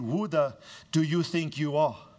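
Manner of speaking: normal talking voice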